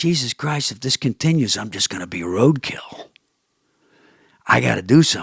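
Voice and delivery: muttered under breath. Retelling what a man said to them while walking past, muttered under breath. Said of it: "he says to me under his voice".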